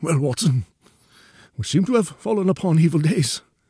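weak, failing, feeble voice, slightly high. Narrator reads the bedridden man greeting watson as he enters, feeble voice. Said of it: "said he in a feeble voice".

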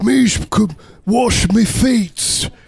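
put-on heavy British accent. Acting out Jesus after being sent back in time: Jesus with heavy British accent. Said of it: "Jesus all of a sudden has a heavy British accent".

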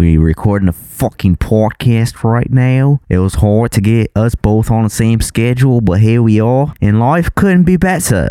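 blurry mix of Australian and British accents. Podcast host talking about recording the podcast, in a vague Australian-British accent. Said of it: "What accent is that?".

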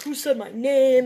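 put-on hollering, loud. Retelling a kid from the crowd yelling after them: imitating a kid yelling. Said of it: "he's yelling at".

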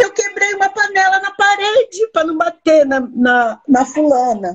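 put-on desperate sobbing. Retelling a call from someone starting therapy with the speaker: imitating someone crying desperately. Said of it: "ela me ligou chorando... Desesperada".

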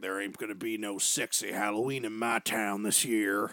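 low, stern, strict put-on small-town sheriff voice. Retelling what a sheriff deputy said about Halloween: imitating a strict small-town sheriff. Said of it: "like the fucking sheriff from Footloose".

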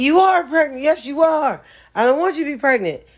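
play-acted, shrill, very high, distraught, top-of-the-lungs child's scream. Retelling a boy's reaction to a prank video: imitating a screaming child. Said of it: "this boy is screaming at the top of his little underdeveloped lungs".

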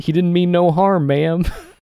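put-on cowboy talk, loud and very high. Describing a man to friends, the speaker quotes him in a cowboy voice. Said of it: "talks like a cowboy".

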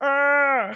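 high battle cry. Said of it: "its battle cry is just".

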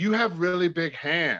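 imitated female voice. Retelling what a woman said at a bar, imitating her exact voice. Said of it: "this is her exact voice".

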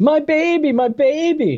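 acted-out very slow, very high, drawn-out pleading yell. Retelling a movie scene where a mother yells for her daughter: imitating someone yelling. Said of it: "she just starts yelling".

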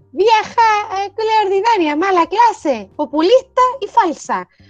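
shrill, very high, dragged-out shouting. Reading out a quote aloud, shouting it. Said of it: "lo quería gritar como".

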